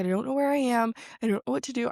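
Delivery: acted-out frightened, disoriented, lost-sounding fretting. Retelling getting lost on the way to class: imitating her own scared self. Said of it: "I was getting so scared".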